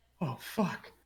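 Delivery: sudden high, startled, alarmed blurt. Voicing the farmers after the creature is pointed out: alarmed middle-aged farmers. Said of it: "and they're like".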